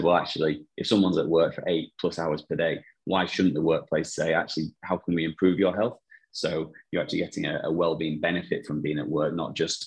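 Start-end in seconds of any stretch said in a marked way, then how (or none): none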